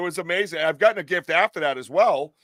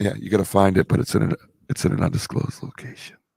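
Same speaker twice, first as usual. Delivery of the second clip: mock sultry voice, much lower; 8 semitones lower than usual. Repeating an earlier phrase into the mic, in a mock sultry voice. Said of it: "I always wanted to say that in a sultry voice".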